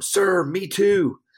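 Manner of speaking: shrill, very high, very loud scream. Retelling screaming right back at the young man: retelling own scream. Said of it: "I just screamed right back at him".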